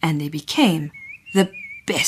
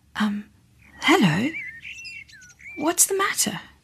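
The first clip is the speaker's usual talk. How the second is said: gentle, soft-spoken, very high voice; 13 semitones higher, 4 dB quieter than usual. A narrator reads her greeting to a big dinosaur with a teardrop: speaking softly. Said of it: "and said softly".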